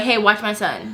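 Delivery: normal talking voice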